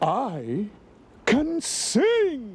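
exclaimed. Eduardo, answering Ralph in thick fog while they try to signal for help, exclaims. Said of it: "Exclaimed Eduardo".

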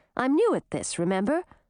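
ordinary delivery

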